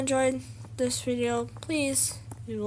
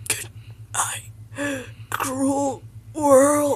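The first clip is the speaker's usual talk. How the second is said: put-on dinosaur voice. Voicing the dinosaur in a comedy scene, in a dinosaur voice. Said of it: "I'm going to be doing the voice of the dinosaur".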